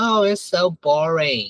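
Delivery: ordinary talk, nothing marked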